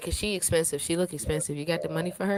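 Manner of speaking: ordinary talk, nothing marked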